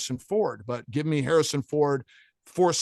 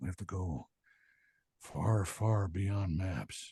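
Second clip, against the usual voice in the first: very low-pitched, very quiet, soft murmur; 8 semitones lower, 10 dB quieter than usual. Recalling a voiceover done for the actor on Call of the Wild, demonstrate Harrison's voice. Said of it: "do Harrison's voice".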